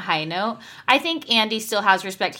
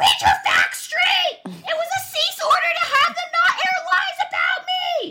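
put-on very high shout with big, swooping pitch swings. Reading a tweet aloud in the voice of Vicky: Vicky's voice. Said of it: "I can read this in Vicky's voice".

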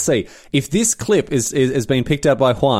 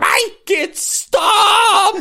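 very high, tormented, anguished horror-movie voice. Retelling how Tom Aberisk clutched his ears when yelled at; mimicking Tom Aberisk's horror-film anguish. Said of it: "like in a horror film".

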